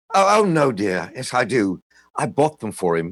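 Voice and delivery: put-on British accent. Son retelling his mother's reply to visitors, imitating Mrs. Steiner's British accent. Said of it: "in her British accent".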